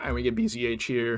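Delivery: voice suddenly breaks mid-sentence. A player tells viewers the next opponent in a game, voice cracking. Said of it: "that voice crack was crazy".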